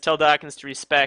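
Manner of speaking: plain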